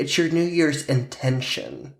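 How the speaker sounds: ordinary delivery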